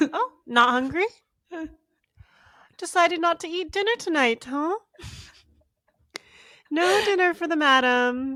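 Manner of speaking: very high put-on British accent. Retelling what they say each time you try to step out, put-on British accent. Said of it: "I don't know why I'm trying to do like a British accent".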